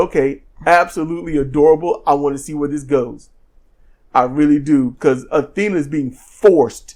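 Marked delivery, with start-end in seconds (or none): none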